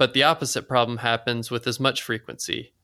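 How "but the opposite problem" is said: ordinary delivery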